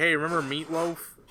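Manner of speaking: plain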